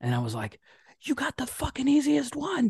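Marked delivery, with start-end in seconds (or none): 1.0-2.7 shrill, outraged screaming, pitched way up. Retelling yelling at a TV game show as a kid: imitating own past screaming. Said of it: "I would be screaming at the T V".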